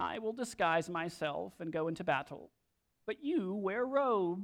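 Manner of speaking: soft, under-the-breath, whining king voice. Reading a Bible verse aloud, voicing the king of Israel to Jehoshaphat: whiny Ahab voice. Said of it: "That's my whiny Ahab voice".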